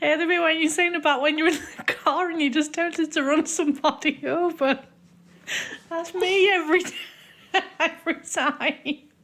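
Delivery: talking through laughter. Leaving a voice message about a podcast bit, laughing while talking. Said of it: "I'm laughing as I'm saying this".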